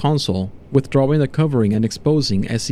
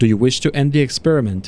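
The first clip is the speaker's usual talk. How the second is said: plain reading voice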